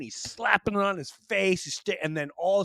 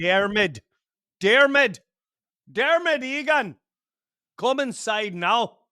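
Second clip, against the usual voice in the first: Irish brogue that slides toward a Scottish accent; 4 semitones higher, 3 dB louder than usual. Recalling childhood Irish neighbours, calling a boy named Dermot inside: Irish accent that sounds Scottish. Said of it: "I get that's like Scottish".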